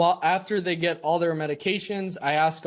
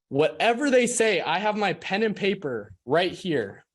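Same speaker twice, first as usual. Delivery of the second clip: normal talking voice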